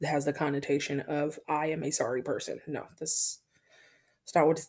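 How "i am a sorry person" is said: ordinary delivery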